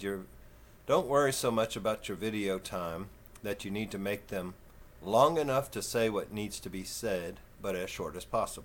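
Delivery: ordinary talk, nothing marked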